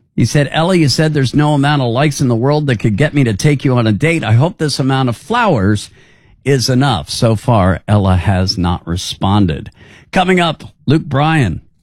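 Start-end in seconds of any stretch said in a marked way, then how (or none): none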